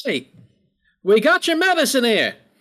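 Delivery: high, head-back holler. As she comes to a stop, the character Kara leans her head back: yelling. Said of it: "just leans her head back and just yells".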